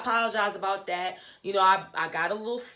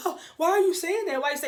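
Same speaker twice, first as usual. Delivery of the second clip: high-pitched, mock surprised, wide-eyed innocence. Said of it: "acting all surprised".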